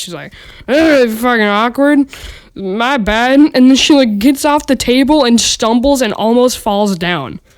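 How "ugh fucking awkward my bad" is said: put-on drunken slurred words, slower. Telling a story, quoting a woman who just pointed at her; imitating drunk slurring. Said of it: "she's slurring her words".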